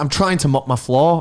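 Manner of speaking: curt, irritated, annoyed tone in a proper voice. Retelling what a woman repeated after being asked sorry, imitating an annoyed proper tone. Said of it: "in like a proper like tone".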